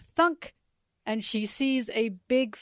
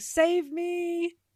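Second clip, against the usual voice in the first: high-pitched yelling. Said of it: "Usopp is yelling".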